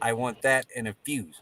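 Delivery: very slow, spelled-out explaining manner. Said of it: "I wanna say this very slow for you".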